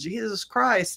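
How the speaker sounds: high yelp. Retelling being hit by a flying bat and ducking: retelling own yell. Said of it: "I yelled".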